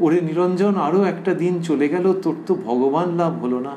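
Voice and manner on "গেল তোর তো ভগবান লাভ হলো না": ordinary talk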